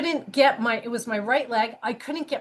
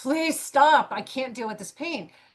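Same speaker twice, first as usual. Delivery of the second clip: put-on, acted-out scream; 2 semitones higher than usual.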